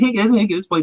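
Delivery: ordinary talk, nothing marked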